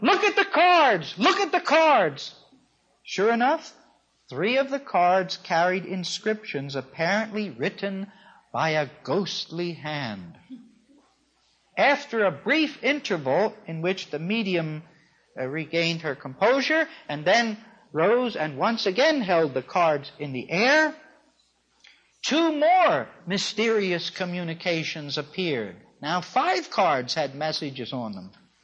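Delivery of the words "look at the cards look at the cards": high, loud cry. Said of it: "and cried out".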